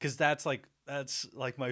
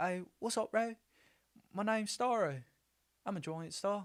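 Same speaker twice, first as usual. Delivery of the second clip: attempted New Zealand accent, pitched up higher; 9 semitones higher than usual. Trying to imitate a movie character, attempted Korg Kiwi accent. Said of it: "I'm trying to do Korg".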